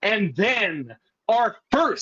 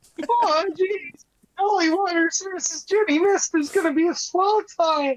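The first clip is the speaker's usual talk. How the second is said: put-on very high, squeaky teen voice; 9 semitones higher than usual. Running through a wrestling card: Morty impression. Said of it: "doing his best fucking Morty impression".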